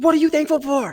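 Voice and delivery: shrill, booming, very high, loud aggressive drill-sergeant voice. A parent retells their two-year-old's bedtime question, imitating an aggressive demand. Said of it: "so aggressively says".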